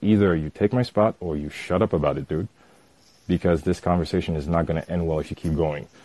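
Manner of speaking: grave, very serious put-on voice. Retelling confronting a man about his spot in line, retelling a dead-serious warning. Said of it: "And I change my tone".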